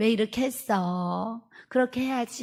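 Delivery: soft, slow, gentle delivery without anger.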